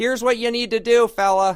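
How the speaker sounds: put-on loud, very high yelling, old radio style. Showing another speaker how a director talks: David Lynch impression. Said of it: "He talks like this".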